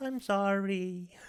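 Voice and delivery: high, slow, insincere mock tone. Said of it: "He's not sorry".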